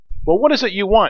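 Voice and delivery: sharp, curt, brusque tone. An old lady opens her door to a man who knocked, asking sharply. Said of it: "she asked sharply".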